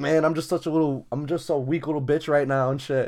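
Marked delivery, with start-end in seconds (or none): none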